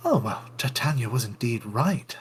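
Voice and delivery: low, half-audible muttering to oneself. Walking away past the wolves in a game, muttering low to oneself. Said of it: "say this low enough so that I'm obviously saying it to myself".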